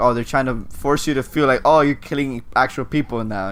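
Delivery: ordinary delivery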